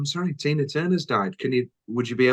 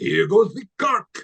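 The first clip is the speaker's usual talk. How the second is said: high-pitched cartoon cat voice; 9 semitones higher than usual. Retelling lines Puss in Boots says on a ride: imitating Puss in Boots voice. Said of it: "he does the voice".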